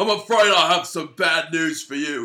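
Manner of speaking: booming, loud, high-pitched belting character voice. Doing a requested voice for the bad segment: Bad News Barrett voice. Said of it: "do the Bad News Barrett voice".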